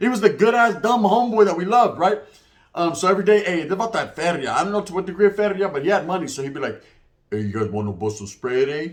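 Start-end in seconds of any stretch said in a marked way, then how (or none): 7.3-8.9 very low voice of a lovable dim buddy. Retelling what a dumb homeboy friend said every day, imitating a slow talker. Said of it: "he talks real slow like that".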